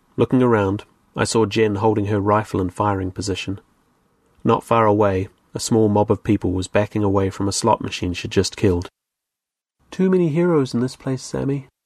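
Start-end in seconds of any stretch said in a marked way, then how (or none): 9.9-11.7 confidential private tone, slightly higher pitch. Speaking to a companion beside her, for his ears only: said quietly. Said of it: "she said quietly".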